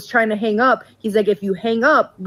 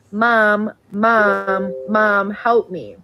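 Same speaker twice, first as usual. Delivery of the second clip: acted, very slow, sobbing, desperate pleading voice. Retelling a scam call to the speaker's mom in a voice like the speaker's: imitating someone crying. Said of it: "was crying saying".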